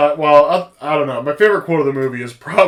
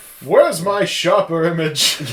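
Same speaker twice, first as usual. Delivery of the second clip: put-on old man voice with an odd accent; 3 semitones higher than usual. Joking about a gadget for Bond, old man voice. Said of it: "I don't know what accent that was there".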